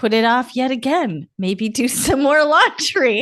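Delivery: reading aloud, cracking up with laughter midway. Reading a book's subtitle aloud: laughing while reading aloud. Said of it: "I can't even do it without laughing".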